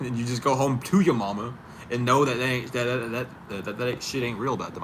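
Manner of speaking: stuttering, stuck repeating the word "that". Speaker giving advice about not reacting to insults; stuttering. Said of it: "I'm still stuttering".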